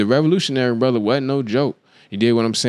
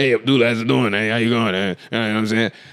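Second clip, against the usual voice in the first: laid-back, streetwise seventies street-style voice. Retelling a movie scene, voicing the old head Lonnie: imitating Lonnie's Mister T-style talk. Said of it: "So Lonnie talk like this".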